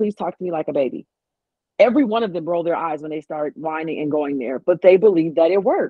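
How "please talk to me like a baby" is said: usual speaking voice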